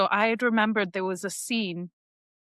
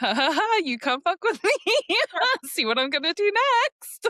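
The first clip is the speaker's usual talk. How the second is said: mock, very high, swooping, giggly maniacal voice; 10 semitones higher than usual. Describing a nightmare, the speaker acts out their dream self: retelling a maniacal giggle. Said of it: "got this maniacal giggle of going".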